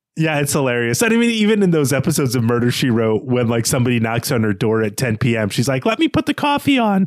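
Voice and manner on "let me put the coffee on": put-on impersonation voice, pitched up very high. Quoting a TV detective who answers a late knock: Angela Lansbury impersonation. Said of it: "that's my Angela Lansbury, uh, impersonation".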